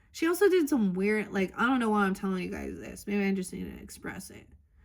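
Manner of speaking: plain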